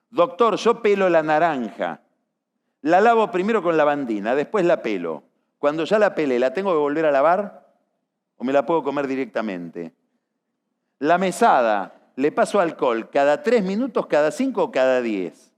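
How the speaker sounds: ordinary delivery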